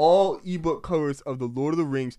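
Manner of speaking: plain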